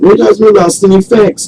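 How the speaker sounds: mock nonchalant, high, light, dismissive.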